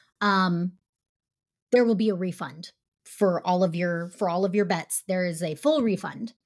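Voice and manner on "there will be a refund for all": ordinary delivery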